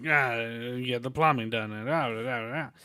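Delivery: gangster-style Brooklyn Italian voice. Describing how other guys who went in there did it: stereotypical Brooklyn Italian accent. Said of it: "stereotypical like American Italian like Brooklyn guy".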